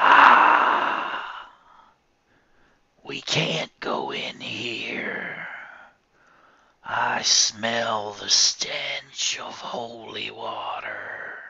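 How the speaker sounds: very slow, disgusted, evil creature voice. Storyteller voicing the evil creature that rose from the grave: evil creature voice. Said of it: "Mary knew this was an evil creature. / Mary knew this was an evil creature. She could tell by the clawed fingers hooked in her hair and its terrible breath on the back of her neck. / And again the dea".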